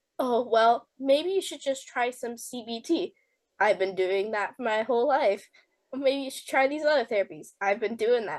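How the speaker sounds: ordinary talk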